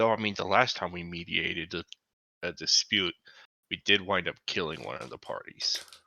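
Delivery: very low, hushed mutter under the breath. Retelling what he said under his breath: retelling a half-whisper under breath. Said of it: "he kinda whispers under his breath".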